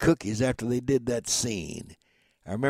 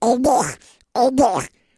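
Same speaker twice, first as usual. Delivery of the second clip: very high, raised pitch, spoken slowly; 12 semitones higher, 7 dB louder than usual. Retelling a little boy he heard one day; Donald Duck voice. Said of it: "that sounded like Donald Duck".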